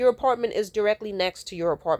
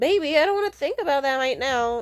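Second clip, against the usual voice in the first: small, whiny little voice; 7 semitones higher than usual. Retelling how he dodged a question, imitating his whiny voice. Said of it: "the little whiny bitch voice that he does".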